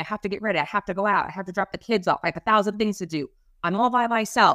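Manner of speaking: frazzled, harried, overwhelmed and stretched-thin outpouring. Retelling what she said at the door about her busy night: imitating someone frazzled. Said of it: "she seemed really frazzled".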